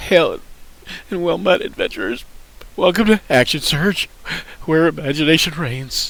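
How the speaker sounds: fake tearful voice. Reading the show intro after choosing a random voice: mock crying voice. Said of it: "we can do crying".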